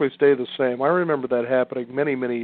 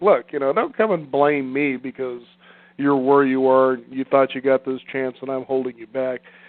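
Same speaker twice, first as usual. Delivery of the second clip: normal talking voice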